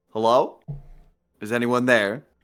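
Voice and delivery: courteous, mild, polite tone. As Brun, calling out at a door, polite. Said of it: "sort of politely".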